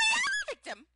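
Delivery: raw, caught-out, off-guard voice, very high. Describing how a woman sounds when caught off guard, imitating Vicky's voice going high. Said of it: "her voice goes really high".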